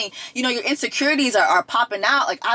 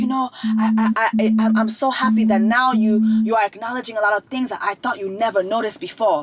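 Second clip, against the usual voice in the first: put-on crying, tearful voice. Retelling how a wife answers her husband: imitating someone crying. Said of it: "she's crying and she's like".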